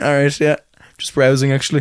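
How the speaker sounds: plain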